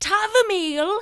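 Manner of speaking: very high, loud call from a distance. Voicing a neighbor outside the window calling a name: neighbor calling your name. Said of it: "you hear your neighbor's voice calling your name".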